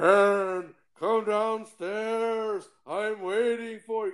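very slow, eerie, ghostly disembodied voice. Recapping a haunting story, voicing the unseen caller in a creepy disembodied voice. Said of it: "a creepy disembodied voice".

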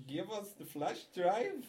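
put-on German bad-guy accent. Imitating a villain demanding a flash drive: bad German accent. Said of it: "like some German bad guy".

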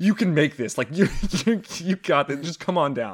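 high, delirious, coaxing and encouraging tone. Retelling how the stuck riders urged the animatronic down: imitating delirious encouragement. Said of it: "all four of us just delirious are like".

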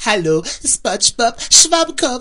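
very high, swooping cartoon announcer voice. Introducing today's series on the channel, the speaker does a SpongeBob announcer impression. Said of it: "hab eigentlich nur nachgemacht, wie die Leute in Spongebob nachmachen".

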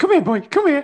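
high, loud, coaxing calling voice.

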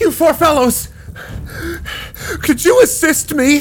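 flustered, breathing heavily. A wounded man bursts in and asks four men for help, flustered and breathing heavily. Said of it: "and a flustered man flies through. He looks like he's covered in blood or wounded, and he's sitting there breathing heavily".

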